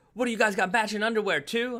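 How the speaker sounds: mock very high, shrill, upset yelling. Retelling how a girl yelled at the couple, imitating someone yelling. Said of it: "And she was yelling at us".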